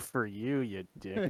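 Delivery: slow mutter kept under the breath. Speaking in character as the player walks past him: muttered under the breath. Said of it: "Just under my breath".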